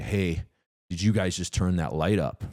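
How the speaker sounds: usual speaking voice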